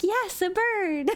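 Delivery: put-on super excited, thrilled child voice. Voicing a child jumping up and down over getting a bird: super excited child. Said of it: "super excited, like, jumping up and down".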